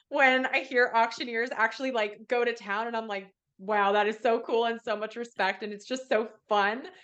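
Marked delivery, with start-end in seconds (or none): none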